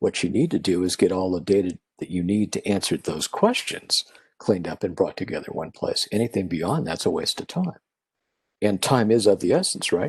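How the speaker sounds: normal talking voice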